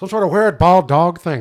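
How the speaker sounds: very loud, bad Canadian accent slipping into Irish. Improvising a scene with a partner, the speaker tries an attempted canadian accent that sounds irish. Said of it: "Is that too Irish?".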